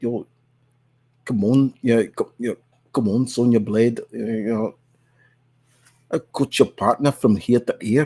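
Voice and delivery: strong, put-on, Dutch-sounding South African accent. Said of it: "a very South African accent where it sounded very Dutch".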